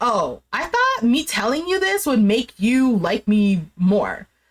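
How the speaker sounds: plain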